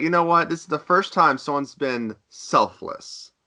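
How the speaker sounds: ordinary delivery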